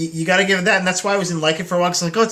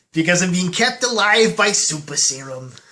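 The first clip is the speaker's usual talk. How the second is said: put-on hyped-up, excited old-timer voice. Joking about a movie cameo, doing a Stan Lee impression. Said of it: "it's me, Stan Lee".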